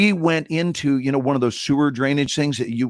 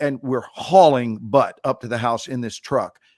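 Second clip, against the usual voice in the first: normal talking voice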